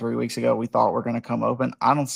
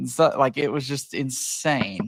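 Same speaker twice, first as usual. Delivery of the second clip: ordinary delivery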